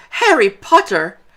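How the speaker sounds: high-pitched, very high, loud creature cry. Narrator reads a creature answering a nervous hello: high-pitched Dobby voice. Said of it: "said the creature in a high-pitched voice".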